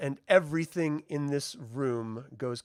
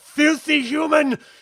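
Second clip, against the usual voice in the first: put-on furious scream, higher and louder; 14 semitones higher, 12 dB louder than usual. Voicing a hit enemy who screams at the humans: screaming in character. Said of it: "He sort of screams out".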